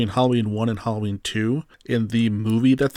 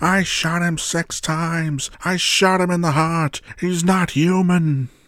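mock raving scream, higher; 7 semitones higher than usual. Retelling a movie scene of Loomis running to the car: imitating Doctor Loomis raving screams. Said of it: "Loomis's raving screams".

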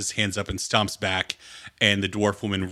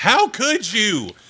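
very high, shrill, loud, enraged screaming outburst; 13 semitones higher, 5 dB louder than usual. Voicing a dwarf woman catching her partner with another: screaming in anger. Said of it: "as she screams".

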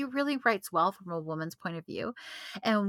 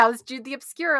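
loud, mocking, needling, teasing tone; 5 semitones higher, 7 dB louder than usual. Retelling how a best friend asked about the book daily: imitating a friend's mocking tone. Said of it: "mocking me".

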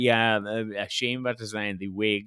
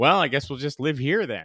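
mock casually unbothered, offhand delivery; 3 semitones higher than usual. Retelling a dramatic cliffhanger line: imitating Hartnell's nonchalant delivery. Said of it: "Hartnell is playing it very nonchalant".

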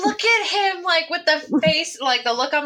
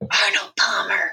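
hushed, drawn-out whisper; 8 semitones lower than usual. Asked what drink they want during a role-play scene, answering in a slow whisper. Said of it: "I whisper slowly".

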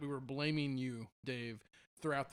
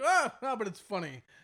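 very high, very loud, startled scream; 6 semitones higher, 7 dB louder than usual. Imitating the other speaker's reflex scream at a show: imitating an embarrassed scream. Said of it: "your reflex was to scream, and you were like".

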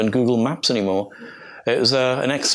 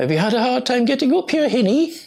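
put-on rough, half-managed Geordie accent, very high-pitched; 12 semitones higher than usual. Telling a tale of an old man at the site: imitating Alice Pandrich's Geordie accent. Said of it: "I can't do her Geordie accent very well".

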